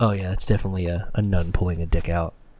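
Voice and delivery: put-on whispering voice. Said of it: "whispering to her everything that was happening on screen".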